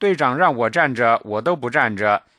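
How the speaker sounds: usual speaking voice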